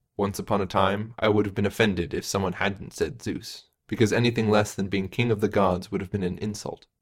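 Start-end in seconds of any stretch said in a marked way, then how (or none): none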